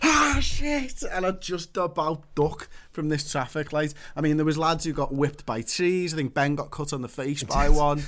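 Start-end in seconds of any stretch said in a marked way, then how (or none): 0.0-1.0 shrieking, very high scream. Recounting ducking under a traffic light, retelling a scream. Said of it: "I'm screaming and I'm like".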